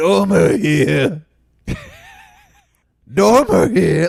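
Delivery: very slow, creaky, rough, swooping awful croak. Retelling a movie trailer where the hero answers the phone: imitating Al Pacino's worst voice ever. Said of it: "the worst voice ever".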